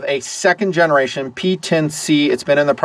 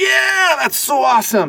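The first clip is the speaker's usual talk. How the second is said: very high, swooping, over-the-top enthusiastic gush; 12 semitones higher than usual. Demonstrating three enthusiasm levels, starting with the top one: high enthusiasm. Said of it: "So this is high enthusiasm".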